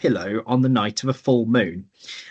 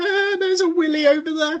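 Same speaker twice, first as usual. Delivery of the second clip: imitated childish giggling, higher pitch. Retelling nudging each other around the museum: imitating giggling like schoolchildren. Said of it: "giggling like school children".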